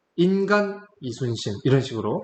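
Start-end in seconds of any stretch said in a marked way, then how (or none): 0.2-1.5 hard stress landing on the word 인간. Explaining the intent of an emphasized phrase, with stress on 인간. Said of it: "이 인간이라는 요 단어에 강세를 두셨어요".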